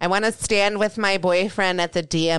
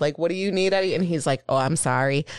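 usual speaking voice

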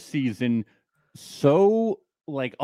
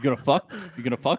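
mock aggressive taunting tone. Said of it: "It was very frightening".

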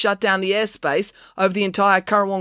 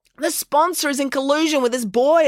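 high-pitched, pointed, accusing tone; 7 semitones higher than usual. [name] turns on Joe and the sponsor, accusing. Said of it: "accused [name]".

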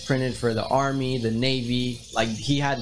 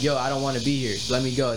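put-on pleading, begging tone. Retelling a man's boot camp story, imitating someone begging. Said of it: "he was begging".

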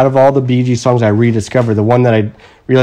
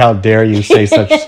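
ordinary delivery

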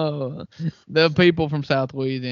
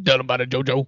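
put-on Cajun accent, football coach voice. Ending a South Louisiana podcast episode with an Ed Orgeron impersonation. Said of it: "That was my Ed Orgeron impersonation".

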